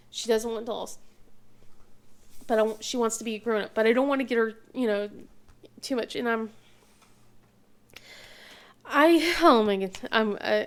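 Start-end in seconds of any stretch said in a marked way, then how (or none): 6.1-10.6 raised, very slow, halting, overcome emotional stumble. Worrying aloud about what to get a child, getting a little emotional. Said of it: "I'm getting a little emotional about it".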